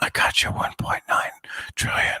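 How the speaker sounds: hushed, breathy stage whisper. Mocking a politician's promise of money: imitating Joe Biden whispering. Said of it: "Sleepy Joe was whispering, like".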